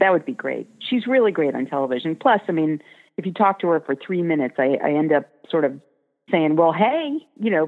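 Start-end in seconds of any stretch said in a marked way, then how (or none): 6.6-7.7 picked-up Georgia accent, pitched up. Admitting he picks up her accent after talking with her, georgia accent. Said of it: "picking up her hey, lovely y'all. Georgia accent".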